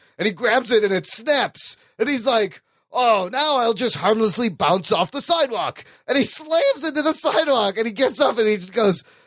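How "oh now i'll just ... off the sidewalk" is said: over-the-top, big and pompous heroic bravado. Retelling a comic scene where the hero jumps off a building: over-the-top Tick voice. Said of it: "he's always very over the top".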